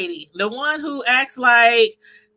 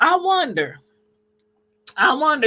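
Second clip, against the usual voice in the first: clumsy, bad put-on Caribbean accent; 3 semitones higher than usual. Speaker reacts to a woman's claim about the Colts, in bad Caribbean accent. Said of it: "You said with her bad Caribbean accent".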